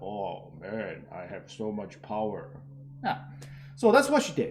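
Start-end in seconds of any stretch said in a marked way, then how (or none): 0.0-2.5 very low, slow, exaggerated baritone voice. Showing how a woman tried to sound powerful, imitating a very deep baritone. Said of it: "talking with a very deep baritone voice".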